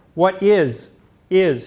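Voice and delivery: pause between "what is" and "is". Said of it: "he paused".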